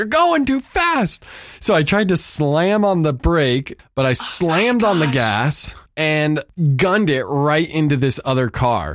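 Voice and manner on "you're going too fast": piercing, shrill, very high, pitched-way-up holler. Retelling being yelled at while parking too fast, retelling a yell. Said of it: "he yells at me like".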